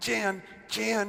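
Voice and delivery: stage whisper. Retelling how his dad called his mom's name, in a stage whisper. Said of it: "he says in a stage whisper".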